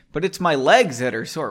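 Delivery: ordinary delivery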